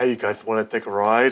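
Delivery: muscleman driver voice, called out. Pretending to be a rickshaw driver who looks like Lou Ferrigno, the speaker does a Lou Ferrigno impression. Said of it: "That's my Lou Ferrigno".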